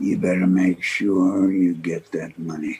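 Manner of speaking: threatening, menacing tone. Pressing another man about getting the money, in a threatening tone. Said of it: "Am I sensing a threatening tone".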